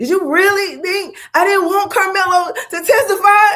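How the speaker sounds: very high quavering voice. Retelling a lawyer's question in court, imitating a shaking voice. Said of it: "his voice changes and is shaking".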